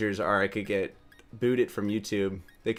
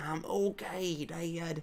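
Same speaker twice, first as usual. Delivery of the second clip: put-on cartoon boy voice, higher and quieter; 8 semitones higher, 9 dB quieter than usual. Imagining Bobby as a Butterfree answering his dad: voicing Bobby. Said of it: "with Bobby as the Butterfree".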